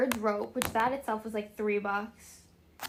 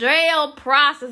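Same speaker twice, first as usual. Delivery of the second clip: put-on booming, full-volume Southern accent; 3 semitones higher, 12 dB louder than usual. Retelling a visit to an old jail, quoting the girl there: imitating the girl's accent. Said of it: "with that accent".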